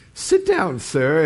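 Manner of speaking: put-on British accent. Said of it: "I just hear it with a British accent".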